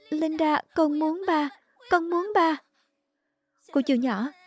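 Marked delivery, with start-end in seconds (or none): 0.1-2.6 sobbing, pleading crying through tears. Begging to be taken to her father, crying. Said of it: "đừng khóc, đừng khóc".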